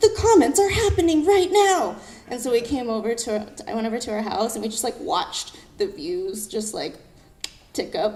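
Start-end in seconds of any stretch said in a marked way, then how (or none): 0.0-2.0 very high, loud, laughing excited squeal. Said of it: "She's like".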